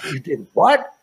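grossed-out, appalled, revolted disgust. Retelling how a man reacts to what he has just heard, imitating someone super disgusted. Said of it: "he gets like super disgusted".

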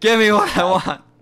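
put-on crying scream. Retelling a wrestling angle, imitating Batista: imitating Batista crying and screaming. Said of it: "just crying, screaming".

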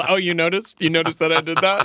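put-on big, booming, carrying voice. Back on stage, answering the hotel manager in front of everyone, retelling a booming voice. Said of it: "This booming voice over the entire".

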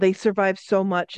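ordinary delivery

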